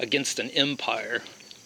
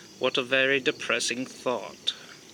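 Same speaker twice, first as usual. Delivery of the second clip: put-on deadpan character voice. Speaker quoting a character's reply to Blake, imitating Avon's droll voice. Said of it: "in his droll voice".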